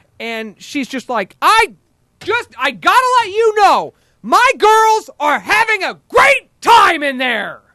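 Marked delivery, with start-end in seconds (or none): 1.4-7.5 shrieking rage, very high-pitched, very loud and shrill. Retelling what a furious lady said to her, mock-furious. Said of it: "she's still in furious mode".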